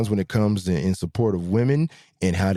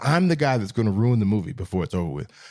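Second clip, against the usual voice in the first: ordinary talk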